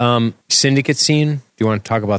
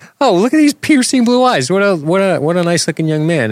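high, loud mock swooning gush. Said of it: "'cause I'm like".

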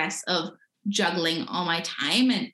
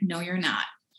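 level, calm, utterly firm and very stern. Retelling how a friend answered during midterms: imitating a calm but very stern reply. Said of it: "really, like, calmly, but, like, very sternly".

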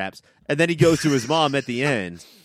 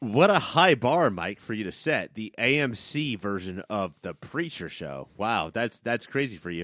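mocking, insulting tone of voice; 3 semitones lower, 4 dB quieter than usual. Teasing another speaker about the bar he set: insulting tone. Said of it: "trying to insult me now with your fucking tone of voice".

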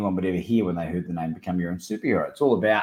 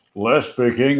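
beautiful, smooth, rich chocolatey voice; 3 semitones higher than usual. Speaker retelling phoning Les Brown, who picks up, Les Brown's chocolate voice. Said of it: "in that beautiful chocolate voice of his".

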